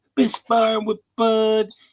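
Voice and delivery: high, put-on babyish toddler-talk voice. Quoting what a man once said, put-on baby voice. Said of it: "I'm going to try to do my best baby voice".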